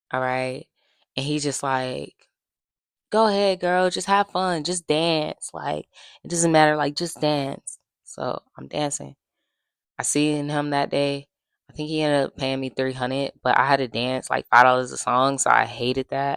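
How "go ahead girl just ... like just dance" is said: camp, flamboyant, showy voice, cheering and encouraging. Retelling what a man at the club kept saying: imitating a flamboyant man. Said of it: "he is so fruity in his mannerisms".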